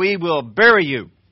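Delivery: very loud, slow, drawn-out, booming scream. Listing signs of a bad business meeting, the nursery lady's line: imitating someone screaming. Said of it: "pounds the lectern with her shoe and screams".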